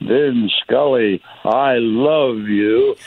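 heavy voice, very slow and drawn out. Retelling a fan calling out from a small crowd: Hilda Chester's heavy voice. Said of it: "I heard her heavy voice say".

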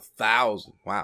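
patronizing, condescending. Reacting to a co-host's claim about a video game: patronizing. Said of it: "You sound so patronizing".

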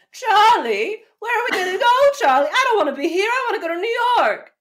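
very high, shrill, full-on screaming shriek. Leaning away from the microphone to give an example of how she talks, screamed. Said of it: "scream every line".

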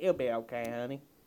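put-on sweet, wholesome old grandmotherly Southern lady voice. Voicing a wholesome old woman reassuring someone: wholesome old woman, southern accent. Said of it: "wholesome old woman with a southern accent saying".

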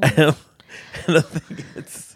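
talking through laughter. Answering another speaker about a word's meaning, laughing while talking. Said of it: "Why are you laughing?".

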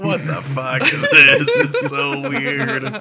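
high, slow, laughing disbelief.

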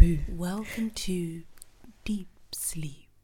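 movie-theatre announcer voice. A podcast co-host opens the show with a spoof intro; cinema announcer voice. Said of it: "Why do you sound like the cinema?".

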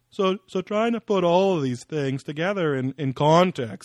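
mock high-pitched nasal voice. Speaker imitates a man explaining strange legends, imitating a high nasal voice. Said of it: "high-pitched kind of Kermit-y voice".

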